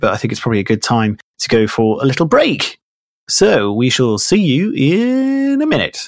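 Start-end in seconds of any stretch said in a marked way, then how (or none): 1.4-6.1 sing-song radio DJ patter voice. Speaker announcing a break to listeners, in a radio DJ voice. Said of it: "You sounded like such a radio DJ there".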